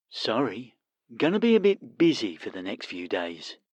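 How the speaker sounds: low, soft voice sounding like a phone line. Narrator reading a story, a character on a phone call: telephone voice. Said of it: "sounds as if they are talking through a telephone".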